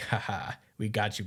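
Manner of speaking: acted smug bravado, putting up a front. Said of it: "putting up a front".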